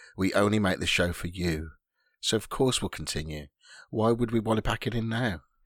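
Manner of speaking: calming, smoothed-over, soothing voice. Speaking to Joe on the show, in a deliberate smoothing voice. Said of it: "my smoothing voice".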